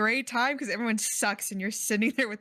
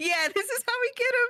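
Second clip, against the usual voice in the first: put-on mimicked young teen voice, higher; 13 semitones higher than usual. Imitating a fourteen-year-old plotting against Mister Beast: imitating a fourteen-year-old. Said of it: "this fourteen-year-old being like".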